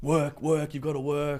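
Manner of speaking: loud shout.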